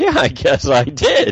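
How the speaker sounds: slow, wide-ranging smug drawl.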